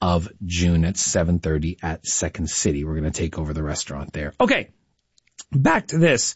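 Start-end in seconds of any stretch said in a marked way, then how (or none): 4.4-6.4 breaking, cracked voice mid-phrase. A host turning back to the prize contest, voice cracking. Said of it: "my voice cracked".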